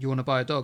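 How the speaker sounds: ordinary talk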